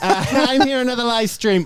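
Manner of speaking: high, attempted English accent in influencer-style voice. Asked to play an influencer during a live stream, influencer voice attempting English accent. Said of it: "I don't know why I've made it sound like that".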